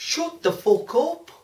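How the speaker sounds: vague put-on Lancashire accent. Mid-conversation, the speaker tells someone to shut up, in a vague Lancashire accent. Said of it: "It sounded Lancashire or something".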